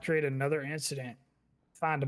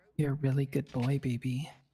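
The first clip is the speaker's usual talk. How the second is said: creepy, unsettling put-on voice. A player speaks to the other after boasting he can do it too: creepy voice. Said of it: "that's that creepy voice you called me in".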